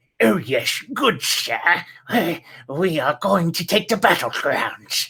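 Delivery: put-on genteel, dapper hobgoblin commander voice. Showing how a dapper hobgoblin would talk: put-on dapper hobgoblin general voice. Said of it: "that's how I would voice him".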